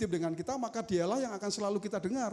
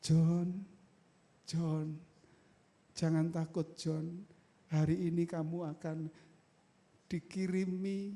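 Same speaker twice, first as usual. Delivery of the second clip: gentle, mild, soft, comforting, reassuring voice; 3 semitones lower than usual. Sermon, acting out a man who talks quietly: soft, quiet speech. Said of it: "Bapak ini ngomongnya pelan".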